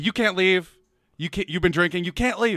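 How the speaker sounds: insistent, urgent pleading cry, kept mild. Retelling how the girls yelled at the speaker: imitating girls screaming. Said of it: "they start screaming at me".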